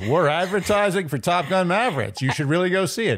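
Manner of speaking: mock cheery, high-pitched cheesy advertisement voice.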